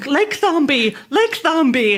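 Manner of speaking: frantic, alarmed, panicked, repeated calling out. Retelling panicking in a lake race, imitating own screaming. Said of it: "I started screaming".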